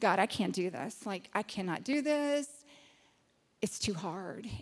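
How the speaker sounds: acted-out, really nervous voice. Recalling getting nervous each time along the way, re-enacting being really nervous. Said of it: "I would get really nervous and go".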